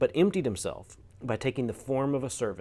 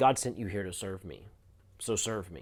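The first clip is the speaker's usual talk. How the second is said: mock-arrogant, condescending, looking-down tone; 4 semitones lower than usual. Quoting what a person said to the speaker as a worker, mimicking arrogant condescension. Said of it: "there's this arrogance of looking down at the worker".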